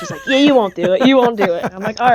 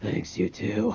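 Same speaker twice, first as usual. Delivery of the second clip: hushed, breathy whisper in an odd put-on voice; 11 dB quieter than usual. Retelling saying goodbye to the woman at Applebee's, in a special put-on voice. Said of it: "say goodbye in that voice".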